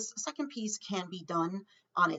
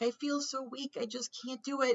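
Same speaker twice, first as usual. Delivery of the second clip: put-on tearful voice, pitched higher; 6 semitones higher than usual. Speaker retells how a woman with cancer talks on weak days: imitating someone in tears. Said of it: "she's like in tears and she's like".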